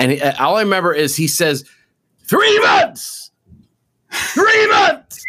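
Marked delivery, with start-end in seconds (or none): 2.2-5.2 high-pitched scream. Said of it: "he screams it".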